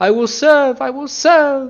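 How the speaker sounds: very high, shrill, loud, frantic and terrified monster squealing. Game master voices a beholder submitting to a mind flayer, telepathic squeal. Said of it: "The beholder telepathically squeals".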